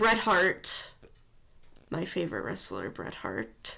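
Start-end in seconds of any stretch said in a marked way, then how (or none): 1.9-3.8 softly spoken, lower and quieter. Listing the game's wrestlers and naming a favorite: said very quietly. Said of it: "she said very quietly".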